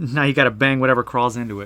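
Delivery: plain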